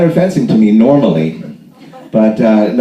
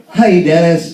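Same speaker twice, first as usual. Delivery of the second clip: put-on patronizing, slow, high, talking-down voice; 7 semitones higher than usual. Speaker mimics how people bend over to address him, imitating people talking down slowly. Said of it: "they have to do it like this".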